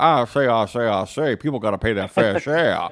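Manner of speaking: fake, deep, low baritone senator voice. Joking that someone should demand fair payment: Senator Kennedy voice. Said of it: "fake voices like Senator Kennedy to go like".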